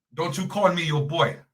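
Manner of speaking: slight put-on British accent. Retelling a man's reply, in a little British accent. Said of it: "in a little British accent".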